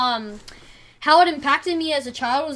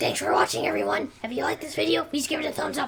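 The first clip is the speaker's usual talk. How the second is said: put-on young child voice, quieter; 6 dB quieter than usual. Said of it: "that's how I used to sound like when I was little".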